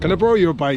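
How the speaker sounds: bad put-on Irish accent. Retelling what a man walking past said to him: terrible irish accent. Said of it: "It's a terrible Irish accent".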